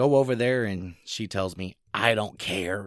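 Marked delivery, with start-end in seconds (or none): 1.9-2.9 put-on older woman's voice. Retelling what the wife's mother said in a separate booth: imitating her voice. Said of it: "Can I use that voice?".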